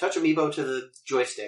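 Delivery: normal talking voice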